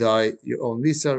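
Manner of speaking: ordinary talk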